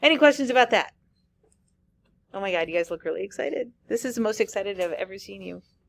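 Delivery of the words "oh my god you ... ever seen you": soft, dry, sarcastic remark. Lecturer to students after a proof about inverse functions, sarcastic. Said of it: "That was sarcasm".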